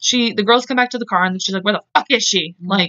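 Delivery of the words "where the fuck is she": mock-angry, acted-out mad outburst. Telling how someone reacted when the girls came back to the car, retelling an angry demand. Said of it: "So Melinda was pissed. She was mad".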